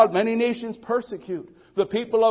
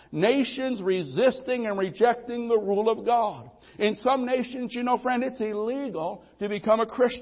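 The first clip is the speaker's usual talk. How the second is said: plain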